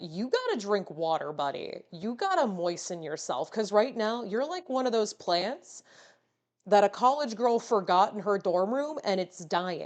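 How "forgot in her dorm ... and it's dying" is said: normal talking voice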